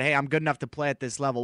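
ordinary talk

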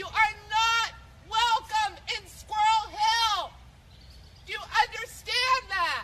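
screaming. Resident confronting an unwelcome visitor on her street, screaming. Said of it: "She is screaming".

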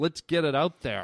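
ordinary delivery

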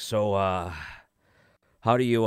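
put-on breathless speech while eating. Retelling a guest's question at a holiday meal, imitating someone out of breath while eating. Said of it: "he'd say this like he's trying to catch his breath while eating".

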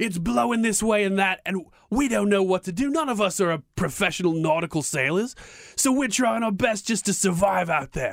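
put-on Australian accent creeping in. Retelling a man's boating story from the golf course, put-on australian accent. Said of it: "slipping into an Australian accent here".

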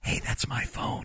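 barely voiced, very quiet whispered aside. Retelling quietly telling a seated interview guest about a phone: retelling a whisper. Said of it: "I kinda whisper to him".

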